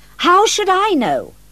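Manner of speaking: heated, angry voice, pitched very high. Carlo answers Ruth's question about Stephanie, quite angry now. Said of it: "quite angry now".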